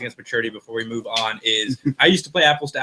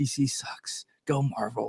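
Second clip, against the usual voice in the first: put-on whispered voice, much quieter; 9 dB quieter than usual. On a podcast, switching into another personality's voice, whispered Rondell impression. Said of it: "That's why I'm whispering".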